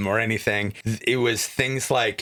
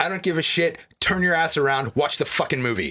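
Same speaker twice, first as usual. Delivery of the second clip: mock fed-up, angry yelling with a rebuking tone; 4 semitones higher than usual. Retelling telling the friend of a texting moviegoer off: retelling angry scolding. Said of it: "there was some anger there".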